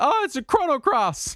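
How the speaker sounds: high, mock excited gush. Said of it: "And I'm like".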